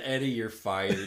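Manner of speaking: put-on disdainful tone. Recalling firing someone after chocolate spilled everywhere, retelling a disdainful remark. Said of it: "The disdain in your voice".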